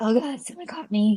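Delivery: alarmed, panicked, frightened blurted outburst. Retelling seeing a headlight behind in a race: reenacted panicking. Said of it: "panicking and I'm like".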